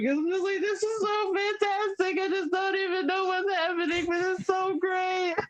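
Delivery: bawling, tearful, crying through every word. Retelling own words while bawling on the couch: imitating own past crying. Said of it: "bawling my eyes out on my living room couch".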